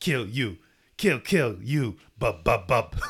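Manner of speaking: silly, broken, babbling creature voice. Joining in imitating the collared Wolverine clones: silly Wolverine clone Yoda talk. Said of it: "their silly little Yoda talk".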